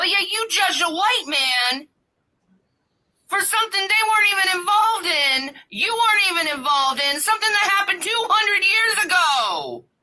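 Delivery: impassioned, shrill, high screaming rant. Ranting about race issues while another speaker listens, screaming loudly. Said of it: "Why is she screaming so loud?".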